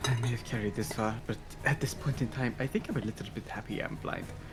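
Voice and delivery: soft, hushed half-whispered aside. As Nyx, still blind, is helped up by Irius, he half-whispers to him. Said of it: "he whispers to Irius".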